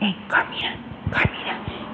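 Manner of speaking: hushed, breathy whisper, barely audible. Retelling a neighbor calling out a name: imitating someone whispering.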